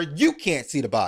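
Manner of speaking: plain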